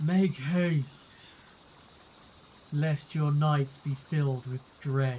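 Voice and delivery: slow, typical undead voice.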